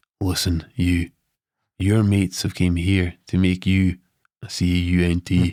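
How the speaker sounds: whispering softly. Retelling what the tea lady said into the ear: imitating a soft whisper. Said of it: "all soft".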